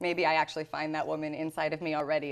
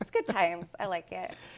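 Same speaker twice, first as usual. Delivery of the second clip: put-on valley girl accent. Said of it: "You're a Valley girl".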